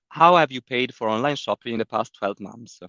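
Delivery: ordinary talk, nothing marked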